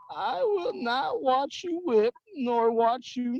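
put-on high-pitched old grandma voice. Repeating a tongue-twister phrase after the other player, in a grandma accent. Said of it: "grandma accent".

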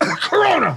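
high, rowdy, mock-shouted outburst. Retelling a news story about a man coughing at police: imitating a man shouting Corona. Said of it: "I'll give you an impression".

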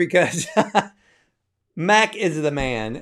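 choked-up, emotional voice, fighting back tears. Host thanking viewers and listeners at sign-off; fighting back getting choked up. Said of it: "I'm trying not to get choked up".

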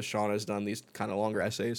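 plain

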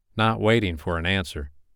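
ordinary delivery

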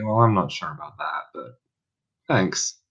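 softly spoken. Playing a character replying in the scene, speaking quietly. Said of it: "I'm just going to quietly say".

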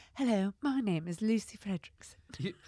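slow, exaggerated, put-on American accent laid on thick.

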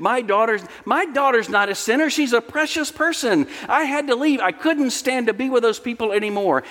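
put-on voice full of disbelief. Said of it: "with incredulity in her voice".

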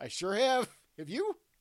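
gushing eagerness, very high pitch and loud. Retelling answering a man's colonoscopy question, acting out an enthusiastic reply. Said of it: "I just said enthusiastically to him".

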